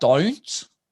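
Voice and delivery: pitch climbs within don't, rising Australian lilt. Imitating how Australians say 'don't': rising pitch on 'don't'. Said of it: "it goes up, up in a little thing".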